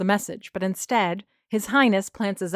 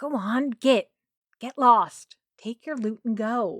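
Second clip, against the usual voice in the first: whisper through gritted teeth, higher; 3 semitones higher than usual. Shooing off a pastry thief so the clients at the counter won't notice, whispering through gritted teeth. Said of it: "I whisper between gritted teeth".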